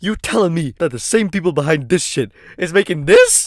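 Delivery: shocked, hyperventilating. Reacting to learning who makes a game: shocked, hyperventilating.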